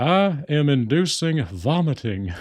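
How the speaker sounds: very slow, drawn-out, swooping character voice. Retelling a cartoon scene about cleaning a toaster: Hank Hill voice. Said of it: "I love the way he pronounces certain words".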